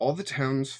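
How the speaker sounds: ordinary delivery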